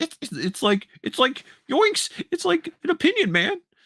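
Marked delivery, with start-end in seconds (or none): 1.7-3.6 very high, swooping, badly done cartoon voice. Answering a remark about hearing Shaggy, doing an awful Shaggy impersonation. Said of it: "That was an awful Shaggy impersonation".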